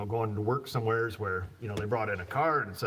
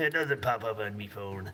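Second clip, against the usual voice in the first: talking like a pirate. Reading viewer comments off a phone, joking: put-on pirate voice. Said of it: "you start to talk like a pirate".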